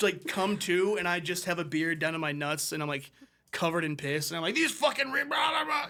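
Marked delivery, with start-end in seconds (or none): 4.5-5.9 mock, high, rambling, incoherent ranting yell. Picturing being covered in piss at a bus stop: imitating yelling. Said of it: "I'm just yelling at home slice".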